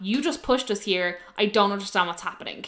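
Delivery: ordinary delivery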